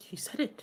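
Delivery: very quiet, hushed whisper. Voicing Margot answering Brett: whispering. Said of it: "Margot will whisper back".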